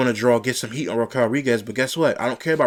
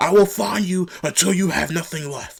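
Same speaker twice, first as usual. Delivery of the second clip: put-on, all-out corny yell, high, top of lungs; 6 semitones higher than usual. Retelling what the official screamed during the attack: imitating Adam Pearce screaming. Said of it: "screaming at the top of his lungs".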